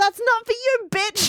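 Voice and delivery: high, loud, angry yell. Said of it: "Phoebe yells".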